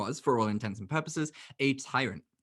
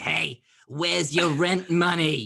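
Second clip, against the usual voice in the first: loud, raised, pitched-up New York landlady voice; 5 semitones higher, 7 dB louder than usual. Describing an imagined seventy-five-year-old New Yorker landlady, doing the Carol Ann landlady voice. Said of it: "imagine a seventy-five-year-old New Yorker woman landlady".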